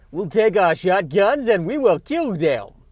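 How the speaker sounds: very loud, drifting, wandering put-on Southern accent. Trying out an accent, the speaker hears it morphing into another kind of accent. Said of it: "morphing into another uh, kind of accent".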